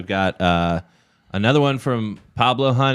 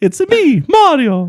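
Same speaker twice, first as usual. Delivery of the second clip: very high squeaky cartoon voice, slow and loud; 6 dB louder than usual. Explaining how he would do an impression of Mario: Mario impression, Mickey Mouse-like. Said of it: "you went into like Mickey Mouse territory".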